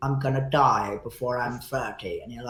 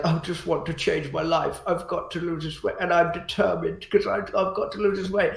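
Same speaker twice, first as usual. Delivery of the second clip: put-on weepy, high, tearful voice; 6 semitones higher than usual. Mocking people who vow to lose weight, imitating a teary voice. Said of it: "they get all teary".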